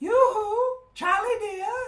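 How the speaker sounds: tiny, tinkling, very high-pitched mermaid voice. Out of the darkness by the weir, a voice calls to Charlie, tinkly and little. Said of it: "a tinkly little voice said".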